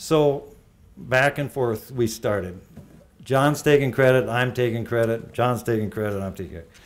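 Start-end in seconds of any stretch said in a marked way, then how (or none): none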